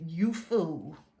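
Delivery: condescending, judgy, talking down with nasty attitude. Retelling a phone call with a judgy agent, Mister Meach: imitating Mister Meach's condescending tone. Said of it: "he literally had that tone like".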